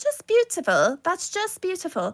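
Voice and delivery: little put-on British lilt, very high-pitched. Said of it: "She just kept slipping into, like, accents".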